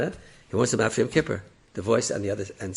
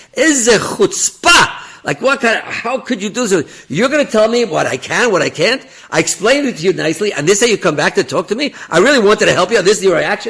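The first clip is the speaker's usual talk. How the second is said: play-acted raging scream, very high, very loud, shrill; 10 semitones higher, 11 dB louder than usual. Retelling how an angry man screamed at someone: retelling a furious scream. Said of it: "he starts screaming at Rav Tenenbaum".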